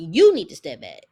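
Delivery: very loud, aggressive screaming. Retelling how Martell screamed at Miss Van: imitating Martell screaming. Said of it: "he gets loud and starts screaming at Miss Van".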